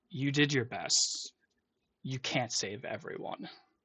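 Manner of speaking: soft, hushed whisper under the breath. Narrating how he clasps the locket on you, he whispers. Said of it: "he just whispers".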